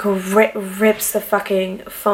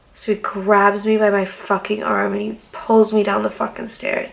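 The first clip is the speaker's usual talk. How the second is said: ordinary delivery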